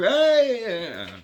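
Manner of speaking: high, loud, friendly shout. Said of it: "he responds back".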